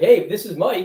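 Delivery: goofy put-on voice. Showing how he answers his phone: stupid, corny phone voice. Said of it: "with this stupid, corny voice".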